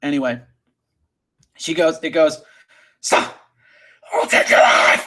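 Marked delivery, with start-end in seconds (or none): 3.0-5.1 raw, visceral scream, badly done. Acting out a line something shouts in a story, screaming voice. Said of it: "it sounds like screaming ... That's my terrible voice".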